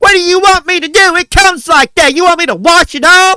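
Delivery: very loud, high, shrill yell. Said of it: "start yelling at us".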